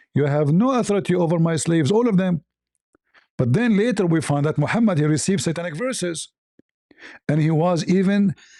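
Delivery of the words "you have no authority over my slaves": ordinary delivery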